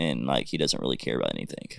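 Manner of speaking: gruff, rough, creaky, rasping coach voice, curt drone. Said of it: "he talks like this".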